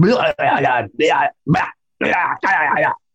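creature voice babbling gibberish like forest beast. Describing alleged recorded creature sounds, doing a Russian Bigfoot impression. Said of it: "that's my impression of the Russian Bigfoot".

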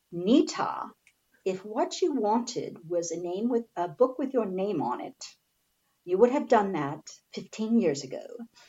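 very bad, poorly done British accent, soft. Quoting what a British woman told her, in a very bad British accent. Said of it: "her British accent very bad".

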